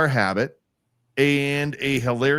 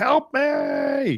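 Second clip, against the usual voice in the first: very high-pitched banshee scream; 13 semitones higher than usual. Speaker imitates the voices in creepy pasta videos: imitating a high-pitched scream. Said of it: "high pitched screaming".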